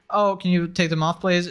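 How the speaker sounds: ordinary delivery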